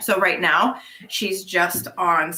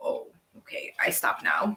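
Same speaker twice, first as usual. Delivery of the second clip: soft, low whispered dog voice. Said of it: "And she's like".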